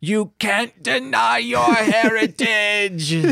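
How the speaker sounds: mocked high, slow, mild, drawn-out yell. Retelling what the mom screamed on hearing the wedding plans: retelling a mother's screaming. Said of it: "And then the mom just screaming".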